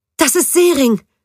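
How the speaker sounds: very high, shrill, excited scream. Narrator reading a story, a woman spotting a familiar face in a raging crowd: excited scream. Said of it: "schrie sie aufgeregt".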